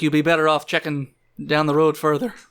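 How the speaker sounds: normal talking voice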